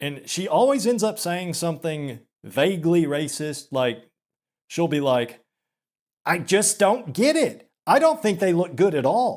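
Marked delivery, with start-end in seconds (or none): 6.2-9.4 put-on, pitched-up, disapproving, openly disgusted voice. Imitating a woman who always ends up saying something vaguely racist: mock-disgusted imitation of her. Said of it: "you can just hear the disgust in her voice".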